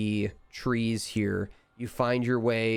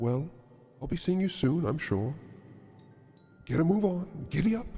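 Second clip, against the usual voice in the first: high, ethereal, disembodied voice drifting out of nowhere; 6 semitones higher than usual. Game master voicing the voice players hear as they awaken, a disembodied voice from the ether. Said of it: "you hear that voice kind of coming from the ether".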